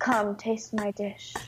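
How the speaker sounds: flat, level, unvarying monotone drone. Imitating how he always says things: imitating his flat monotone. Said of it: "he's so monotone. He's like".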